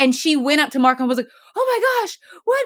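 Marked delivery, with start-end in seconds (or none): 1.6-2.7 put-on thrilled, very high, excited exclamation. Retelling how a character reacted to a doctor: imitating someone excited. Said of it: "And she's all excited and stuff".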